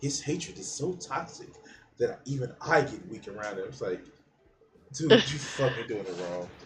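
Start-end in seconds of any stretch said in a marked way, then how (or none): 0.0-3.6 gentle, soft, cheerful announcer delivery. Retelling someone's words a second time, now in a soft, happy announcer voice. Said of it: "that soft, like, just happy, like, announcer voice".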